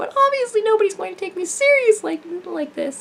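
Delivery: high-pitched cartoonish character voice. Showing how high they can speak, in a cartoon character voice. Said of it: "I can speak like a cartoon character".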